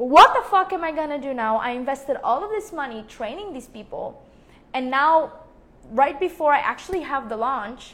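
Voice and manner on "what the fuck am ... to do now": full-throated scream at the top of the lungs. Recalling turning off the camera and screaming into a pillow, retelling screaming into a pillow. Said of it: "screaming at the top of my lungs into my pillow".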